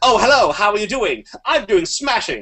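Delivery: very high 1950s movie socialite voice. Describing people on a planet they made up, in a 1950s movie socialite voice. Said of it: "talked like socialites in movies from the nineteen fifties".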